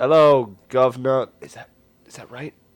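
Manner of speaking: very loud, full-volume put-on London accent. After scratching the giant dog, he looks over and greets you, in a London accent. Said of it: "You've been to London?".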